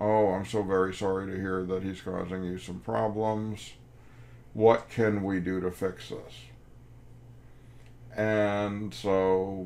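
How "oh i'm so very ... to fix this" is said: usual speaking voice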